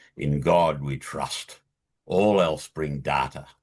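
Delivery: deep, dropped, slow, unhurried voice. Quote what Deming would say about data, in Deming's booming voice. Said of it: "Deming in his booming voice would say".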